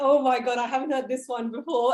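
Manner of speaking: normal talking voice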